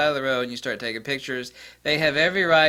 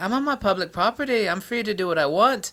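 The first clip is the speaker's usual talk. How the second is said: clumsy, bad British accent, pitched up; 8 semitones higher than usual. Retelling what a photographer told the security guards: attempted british accent. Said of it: "I can't imitate the British accent".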